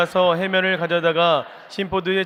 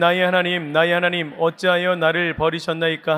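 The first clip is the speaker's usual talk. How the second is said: normal talking voice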